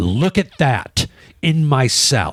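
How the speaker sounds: play-acted, slow, furious, accusing tone. Retelling how a woman complained about a ladybug in the salad: imitating a furious woman. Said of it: "But she was furious".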